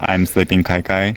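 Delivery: plain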